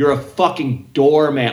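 put-on high scream. Retelling a bride's rant at a doorman: imitating a woman screaming. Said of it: "she's screaming at this doorman".

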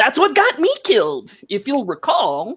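high-pitched wizard voice. The hero's long-dead wizard master speaks to Wildfire in the void: [name]'s voice. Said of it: "Yes, the voice is of your long dead wizard master, [name]. / Yes, the voice is of your long dead wizard master, [name]. / Yes, the voice is of your long dead wizard master, / Yes, the voice is of your".

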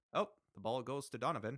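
subdued, emotionless put-on English play-by-play voice. Mocking an English soccer announcer's delivery: imitating a quiet, unemotional English announcer. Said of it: "quiet for half the game".

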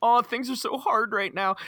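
high, sobbing, tearful blubbering. Retelling a plot where a man confides in a child, imitating someone crying. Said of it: "He begins to like break down crying".

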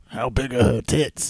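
put-on British accent. Repeating a character's question in imitation of Mark: imitating Mark's voice. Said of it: "Mark's voice".

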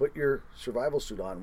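ordinary talk

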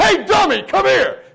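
shrill, high, loud, barking drill-sergeant yell. Recounting arrival at Fort Leonard Wood, imitating someone yelling at people with folders. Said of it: "he's yelling at other people with folders like".

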